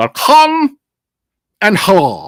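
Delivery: put-on, sing-song Dutch accent, played straight. Showing how a phrase sounds after calling it Dutch: Dutch accent. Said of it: "I think that was pretty much a perfect accent".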